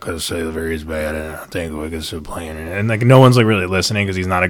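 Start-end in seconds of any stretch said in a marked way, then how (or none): 0.0-2.8 low, flat, droning deadpan monotone. Imitating a poor speaker nobody listens to, imitating a monotone voice. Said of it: "He's got, like, this really monotone voice. So he's like".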